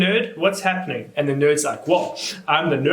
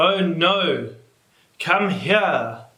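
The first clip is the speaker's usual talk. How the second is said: very slow, flat, dead unemotional reading voice. Reviewer mimicking the movie's voice actors in a tense scene, mock flat, unemotional line reading. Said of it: "it's so unemotional".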